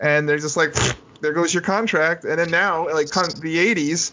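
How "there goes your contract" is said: ordinary talk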